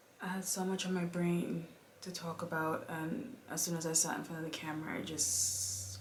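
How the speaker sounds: hushed, barely audible voice.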